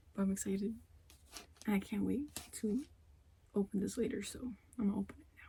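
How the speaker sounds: hushed whisper. Speaking softly while people nearby are taking a nap, whispering. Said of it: "the reason I'm whispering is because people are taking a nap".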